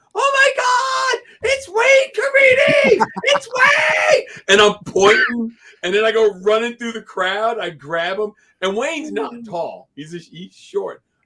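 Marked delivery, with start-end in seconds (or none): 0.1-4.2 high, loud, slow, excited scream. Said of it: "I just start screaming".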